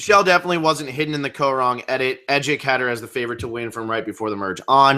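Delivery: normal talking voice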